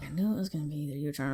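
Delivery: put-on mutter under breath. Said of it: "under her breath to herself".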